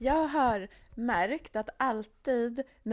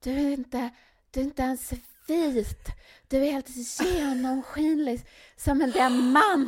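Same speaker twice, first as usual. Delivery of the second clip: put-on, loud, hollered call-out; 3 semitones higher, 4 dB louder than usual. Retelling what people in Mexico called out: imitating someone shouting. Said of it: "en ropade så här".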